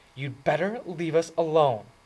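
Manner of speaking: sharp, biting tone. Narrator reads the redhead's retort to Dally, in a biting voice. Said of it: "the redhead said in a biting voice".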